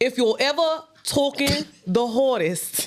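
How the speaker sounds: put-on British accent, a best attempt. Reading the first verse aloud as asked, in a put-on british accent. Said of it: "read the first verse in your best British accent".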